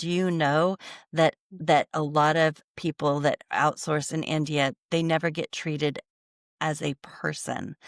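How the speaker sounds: usual speaking voice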